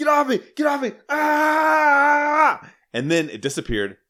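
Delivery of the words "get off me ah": mock scream, much higher pitch, slower. Telling a scary dream about a dark entity holding them down, retelling a scream. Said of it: "even though I was screaming".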